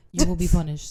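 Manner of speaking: play-acted deadpan, flat, level monotone delivery. Retelling a scene together, quoting the man's words: flat monotone voice. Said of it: "he's monotone".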